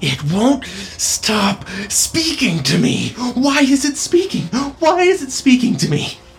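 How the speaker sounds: very high, drawn-out, deranged madman's raving. Narrating a tabletop scene, the speaker voices a man in the crowd: raving madman. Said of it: "is this man who looks incredibly disheveled, dirty. His fingernails are like grimy and his eyes are wild. Like he looks crazy at the moment. Like he's just raving. Like he's kind of like spittle coming out of his mouth".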